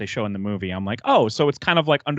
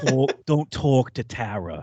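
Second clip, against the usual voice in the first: put-on slow, drawled, strange, unplaceable British accent; 2 semitones higher than usual. Quoting a character from a show in his weird accent: Jax Teller's weird accent. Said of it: "in his weird accent".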